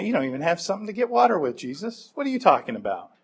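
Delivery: mock, soft, a little snarky and confused tone. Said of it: "maybe a little snarky".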